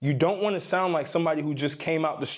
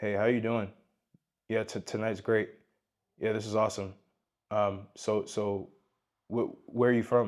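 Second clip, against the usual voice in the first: dull, lifeless, flat, monotone chat; 7 semitones lower, 5 dB quieter than usual. Retelling how many guys talk to women: imitating a dull, emotionless guy. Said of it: "this is how they talk".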